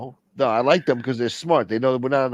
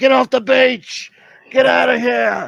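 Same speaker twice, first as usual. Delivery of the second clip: very high, very slow, drawn-out, rough panicked yell; 13 semitones higher, 6 dB louder than usual. Imagining being the guy in Jaws yelling people off the beach. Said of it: "I would have been like that guy in, uh, Jaws".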